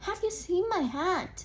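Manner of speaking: reading-aloud voice. Reading a picture book aloud, voicing the bear asking, questioning voice. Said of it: "in a questioning voice".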